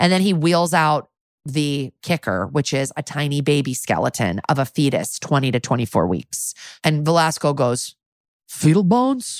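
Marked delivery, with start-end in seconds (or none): 8.5-9.4 dopey, dumb put-on voice, pitched high. Retelling Velasco's reaction to a fetal skeleton, imitating Velasco's dumb voice. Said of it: "Like in this dumb fucking voice".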